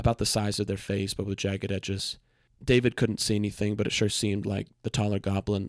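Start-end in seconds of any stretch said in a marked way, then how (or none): none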